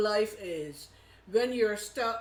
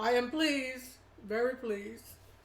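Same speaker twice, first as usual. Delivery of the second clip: voice close to tears, tearful and moved; 2 semitones higher than usual. Asked how you both turned out, answering on the verge of tears. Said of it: "Now I'm gonna cry again".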